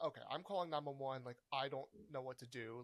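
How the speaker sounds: ordinary delivery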